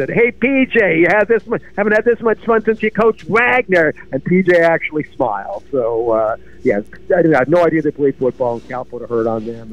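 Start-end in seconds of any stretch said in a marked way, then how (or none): 0.1-3.9 Staten Island New York speech. Retelling how Steve yelled at PJ after the game: retelling a yell, Staten Island accent. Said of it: "yelled at him in a total Staten Island accent".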